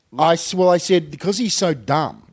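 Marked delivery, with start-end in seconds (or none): none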